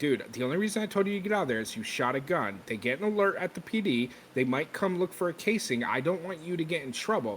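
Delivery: ordinary delivery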